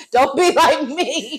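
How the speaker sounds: slow, laughing, spoken through a laugh.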